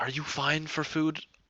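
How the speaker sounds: whispering. Asking a companion quietly at a table, in character: whispering. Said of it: "I'm gonna kinda whisper to Eurydice".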